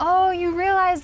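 high, loud, excited gushing.

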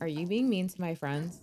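dry, quiet delivery. Narrating a character confronting another character in the scene, deadpan as Trish. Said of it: "deadpan be like".

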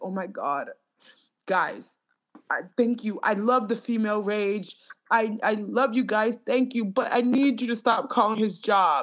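pleading while crying and in tears. Retelling what a woman said in her video: imitating someone crying. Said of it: "she brought a video where she's, like, crying".

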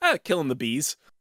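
utterly casual, unbothered, breezy and nonchalant delivery. Retelling a villain's line from The Tick: nonchalant Terror voice. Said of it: "so nonchalantly".

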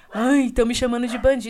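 loud, overdone fake weepy crying. Mocking a politician who cries on a livestream: mocking a politician crying. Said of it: "vai fazer live chorando".

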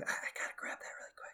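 very quiet, breathy, hushed whisper. Imitating someone grabbing an item in a grocery store: imitating people whispering. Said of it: "keep whispering at the grocery store".

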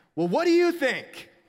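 very high, loud, shrill yell. A cashier retelling how a customer yelled at him, imitating her yelling. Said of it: "And she just yells again".

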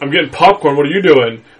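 put-on sarcastic tone. Retelling a movie scene where an older kid answers back: imitating a sarcastic reply.

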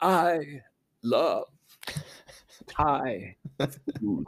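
very slow, word by word, pause after each word. Saying a line the way a british speaker might: pause between every word. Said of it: "Or if you're British, because they can put a pause between every word, you can say".

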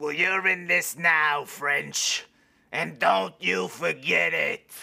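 ugly, rough, menacing snarl. Reading a line aloud, a stranger threatens Mister French: ugly threatening tone. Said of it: "that was ugly".

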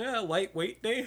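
very high, offhand, jokey delivery. Retelling what they said to a man deadlifting heavy reps, retelling a joking remark. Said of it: "I jokingly half-assed said to him".

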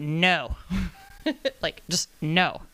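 mock emphatic delivery. Retelling her answer to a man asking to return to Toastmasters, retelling an emphatic no. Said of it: "in capital letters went".

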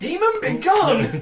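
full fire-and-brimstone preacher, very high and very loud. Acting out how a character might answer: full preacher voice. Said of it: "full preacher".

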